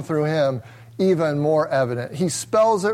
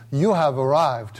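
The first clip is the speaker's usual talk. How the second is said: bad, put-on sweet British sat-nav voice; 3 semitones lower than usual. Describing the GPS arrival message, the speaker imitates its lady's voice: bad sweet British accent. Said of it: "the lady's voice on my GPS in a sweet British accent says".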